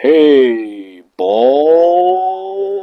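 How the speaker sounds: very slow-motion speech, words stretched out, ball drawn out. Voicing a nose greeting a mirror ball: very slow motion speech. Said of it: "said in very slow motion".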